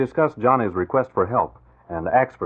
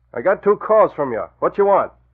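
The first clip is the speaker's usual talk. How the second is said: muffled, pitched-up disguised voice; 8 semitones higher, 4 dB louder than usual. On the phone, disguising his voice with a handkerchief over the mouthpiece: disguised voice. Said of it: "hold my handkerchief over the mouthpiece and change my voice".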